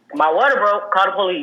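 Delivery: ordinary delivery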